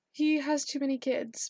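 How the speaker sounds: ordinary talk, nothing marked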